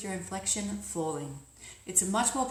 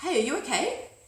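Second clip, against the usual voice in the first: rising lilt, up at the end on okay; 4 semitones higher, 4 dB louder than usual. Demonstrating how the voice goes up when asking a question, rising question intonation. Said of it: "My voice went up at the end to indicate a question".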